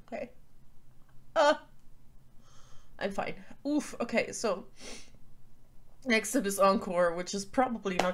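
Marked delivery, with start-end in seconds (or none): 0.1-3.3 breathy, tearful, teary whisper. Out of tissues and wiping tears with a makeup wipe, crying. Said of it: "And I am crying".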